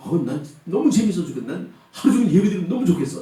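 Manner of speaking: put-on gushing delight.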